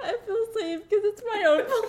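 high-pitched laugh-sobbing, laughing hard like crying.

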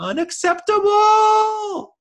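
very high, squeaky voice. Imitating how a character says a word, as a Morty impression. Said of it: "he's just got that kind of high pitch".

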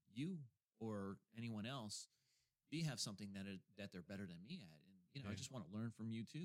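ordinary talk, nothing marked

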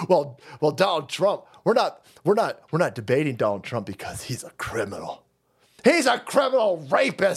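mock, heavily sarcastic put-on delivery. Imagining what they would say to refuse a debate: mock sarcastic voice.

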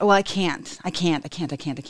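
ordinary delivery

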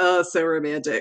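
put-on ironic, not-meaning-it, sarcastic, mocking tone. Describing a romantic beach picnic, then saying it sarcastic. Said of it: "I feel like I'm saying it sarcastically".

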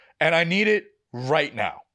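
ordinary delivery

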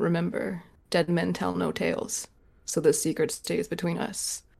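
leaned-in, close, hushed secret whisper. Leaning in close while handing over the parchment, speaking only to him, whispering. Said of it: "lean in really close and just whisper to him".

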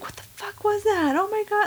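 panicked shriek, pitch shooting way up high. Recounting people hiding in the dark woods, acting out flipping out. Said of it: "flipping out".

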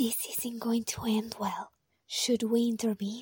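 hushed whispered voice. Onlookers watching a struggle between two others: whispering. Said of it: "Why are we whispering?".

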